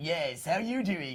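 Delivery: low, deep, very slow and drawn-out delivery. Imitating how a colleague always recorded his lines: deep Darren Norris impression. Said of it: "he's like this".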